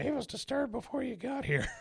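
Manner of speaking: very high, squeaky, creaky, raspy dummy voice. Retelling a scene where a dummy mocks a visitor: Chip's voice. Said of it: "And then Chip's voice".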